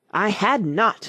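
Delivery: cutting, sharp, furious, very angry cry. Narrator reading the Mouse's retort to Alice: sharp and very angry. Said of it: "sharply and very angrily".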